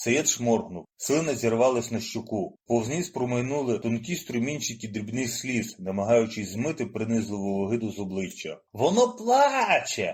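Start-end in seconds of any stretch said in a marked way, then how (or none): 8.7-10.1 very high, shrill, drawn-out gleeful crowing shout. The narrator, seeing tears on a classmate's cheeks, gives a gleeful shout. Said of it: "радісно закричав я".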